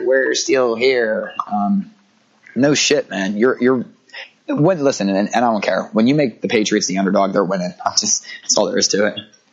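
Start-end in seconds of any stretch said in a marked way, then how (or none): 0.0-1.3 mock, really whiny voice. Retelling what marchers said after the election: imitating a whiny voice. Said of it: "it sounded really whiny".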